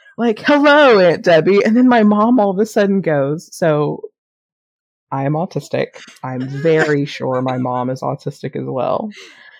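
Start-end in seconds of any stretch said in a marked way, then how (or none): 0.4-1.7 group shouting, higher and louder. Retelling how they all greeted a random person as elevator doors opened, retelling a yell. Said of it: "we all just yelled at this random person".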